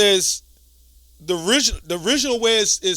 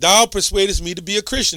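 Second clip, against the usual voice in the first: ordinary talk, nothing marked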